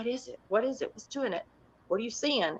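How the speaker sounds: soft, hushed half-whisper under the breath. Retelling a night watch, quoting Patty's questions: imitating someone half-whispering. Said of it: "Patty's whispering to me".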